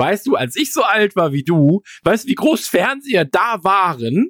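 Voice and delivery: slow, high, preachy fatherly lecturing tone. Retelling what he told a boy, the speaker does a mock-fatherly lecture. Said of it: "mein väterlichen Zeigefinger habe ich erhoben und gesagt".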